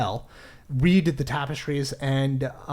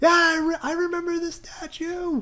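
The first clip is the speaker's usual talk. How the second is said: faraway-sounding voice, very high and slow. Voicing a character answering from far away up the stairs: Fiona's faraway voice. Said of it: "you hear the faraway voice of Fiona".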